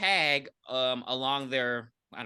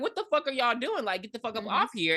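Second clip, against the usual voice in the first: put-on fearless, direct, confrontational tone; 9 semitones higher than usual. Retelling how a character walks up to gang members: imitating Posey, not scared. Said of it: "very not scared".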